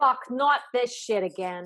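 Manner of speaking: put-on strong, thick Boston accent. Two women ask about charges at a venue; answering in a thick Boston accent. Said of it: "thick Boston accent".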